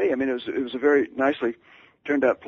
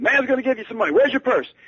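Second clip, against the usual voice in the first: put-on, very high, shrill, loud bellowed shouting; 9 semitones higher than usual. Retelling a phone call where the other man shouted: imitating someone shouting loudly. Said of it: "he was shouting so loudly".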